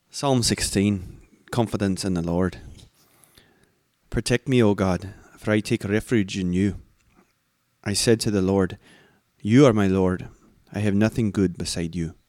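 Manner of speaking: put-on reading in a Scottish accent.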